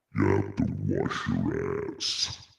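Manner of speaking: very deep, rough, creaky, croaky voice. Doing a voice for a joke line: Jabba the Hutt as Redd Foxx. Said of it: "that's Jabba the Hutt as, as Red Fox".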